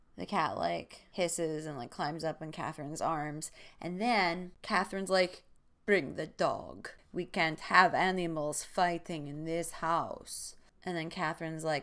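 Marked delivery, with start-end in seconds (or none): 5.9-10.6 slow, bad put-on Russian accent. Retelling what Catherine said when the dog snapped at the cat, bad Russian accent as Catherine. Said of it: "My Russian accent is bad".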